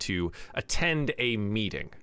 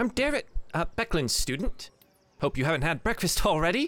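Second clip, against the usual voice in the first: bright, cheery and cheerful; 7 semitones higher than usual. A student greets his teacher's friends as they meet, cheerful. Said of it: "with a cheerful voice greets you".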